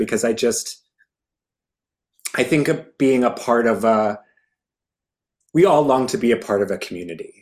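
near tears, teary and emotional. Guest talking about community and the show, getting teary-eyed. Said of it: "I'm getting teary-eyed just thinking about it".

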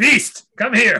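very high, loud screaming call. Retelling a scene from the dinosaur movie: imitating Pinhead screaming. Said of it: "Pinhead screaming".

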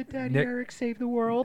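very high-pitched, tearful, crying voice. Retelling a film scene where the girl is crying: imitating Wen crying. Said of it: "and she's crying".

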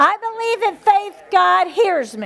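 high, loud yell, slowing at the end.

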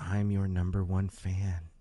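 mock whispering. Retelling what Rita, the favorite top fan, says: imitating Rita whispering. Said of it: "And she whispers".

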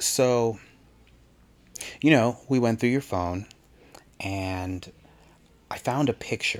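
solemn, grave, serious tone. Retelling a sergeant who took him outside on his first night, retelling a hushed serious tone. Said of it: "she's got like this very hushed serious tone".

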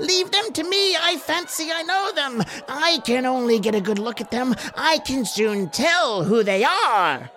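piercing, shrill, high screaming cry. Reading a character screaming to be heard over the crowd's din, in a shrill scream. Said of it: "his shrill voice making it easily heard".

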